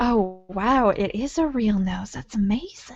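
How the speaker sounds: very low, slow murmur under the breath. Voicing a player character's note in a game: muttering under her breath. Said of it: "make a note under her breath being like".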